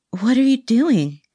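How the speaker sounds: airy, breathy tone, slightly high. She asks the man pressing his lips to her hand what he's doing, breathy. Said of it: "He liked the breathy tone".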